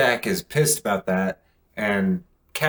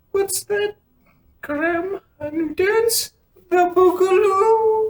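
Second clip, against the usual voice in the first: very high-pitched cartoon game-character owl voice; 3 dB louder than usual. Quoting the owl from a game the speaker played, in an owl character voice. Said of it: "the owl's voice was almost the exact same".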